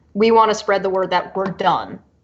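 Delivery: plain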